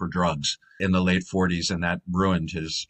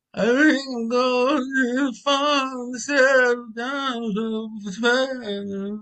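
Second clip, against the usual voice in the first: higher put-on voice trailing off into a mumble. Showing how an old film actor delivered lines, imitating Stepin Fetchit fading away. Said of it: "and he'd fade away".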